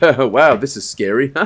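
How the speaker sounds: put-on sarcastic voice. Retelling what the main character says while spooky things happen: imitating sarcastic remark. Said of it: "I do actually love our main character's sarcasm".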